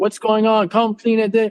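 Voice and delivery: plain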